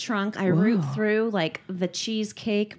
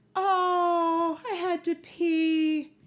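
put-on little child voice, very high and very slow; 9 semitones higher than usual. Retelling a roadside stop, imitating her little voice. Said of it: "hear her little voice go".

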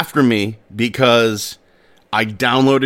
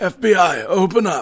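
out-of-breath, high, bad fake old man voice; 7 semitones higher than usual. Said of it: "I'm not good at impressions".

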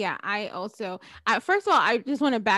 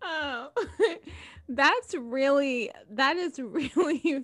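talking through laughter, pitched higher; 5 semitones higher than usual. Reacting to another speaker's story, laughing while talking. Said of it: "I'm sorry, I'm laughing".

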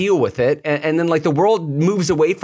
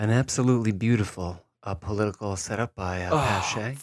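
put-on golf commentary voice, quieter; 8 semitones lower, 8 dB quieter than usual. Asked by Ian for his take, he answers in golf commentator voice. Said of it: "What is the voice you're doing?".

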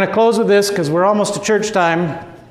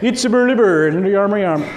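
fast, put-on Swedish-sounding nonsense babble. Speaker joking about how Christians in Sweden speak, Swedish Chef impression. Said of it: "speak like the Swedish chef from the Muppets".

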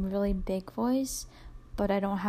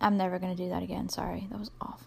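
usual speaking voice

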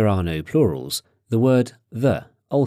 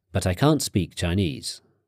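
usual speaking voice

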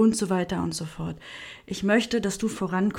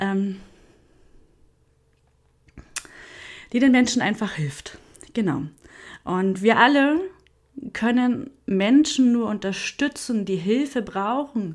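raised voice, on the verge of crying; 2 semitones higher, 5 dB louder than usual. Speaker sharing a personal wish, close to tears. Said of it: "ich fange gleich an zu heulen übrigens".

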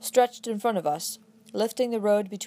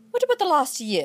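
indignant, high-pitched tone; 5 semitones higher than usual. A narrator reads a woman interrupting the narrator, indignant demand. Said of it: "she demanded indignantly".

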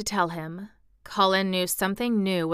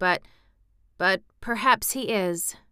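ordinary delivery

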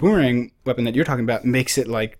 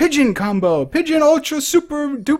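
very high, hyped-up announcer voice; 13 semitones higher, 3 dB louder than usual. Retelling a game's lines, imitating the announcer doing the announcing. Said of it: "every time you do, like, you kill some pigeons, he's like".

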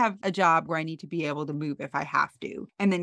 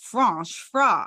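put-on French accent; 3 semitones higher, 4 dB louder than usual. Retelling a scene where Carrie arrives with McDonald's wearing a beret: Carrie's fake French accent. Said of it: "doing, like, a French accent".

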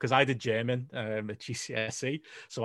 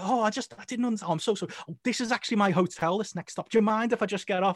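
mock confused British accent, much higher pitch; 9 semitones higher than usual. Retelling how a tourist talked his way out of paying the fare: imitating a confused british tourist. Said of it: "being confused British tourist".

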